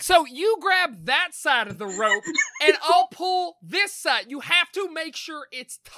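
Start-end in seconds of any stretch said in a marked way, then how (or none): 0.0-4.2 louder Southern character voice. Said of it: "maybe louder".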